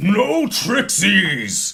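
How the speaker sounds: crying out in ogre voice. A game narrator voices an ogre swinging its maul, crying out in ogre voice. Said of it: "he cries out in ogre".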